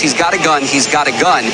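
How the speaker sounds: ordinary talk, nothing marked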